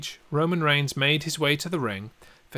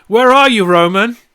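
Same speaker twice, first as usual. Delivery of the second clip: very loud, high, challenging shout; 9 semitones higher, 17 dB louder than usual. Retelling how Edge shouted at the camera: imitating Edge shouting. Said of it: "as Edge was stood in the ring shouting at the camera".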